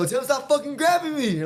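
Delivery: riled-up, hyped voice. Retelling an argument with the fight crowd: retelling getting hyped with the crowd. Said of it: "I was getting hyped with the crowd".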